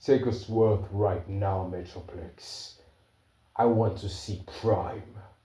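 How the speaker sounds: soft, angry, demanding voice. Retelling a story scene, speaking as Grimlock to Metroplex, angry Grimlock voice. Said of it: "Grimlock says it with a kind of angry voice".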